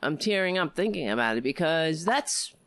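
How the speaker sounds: ordinary delivery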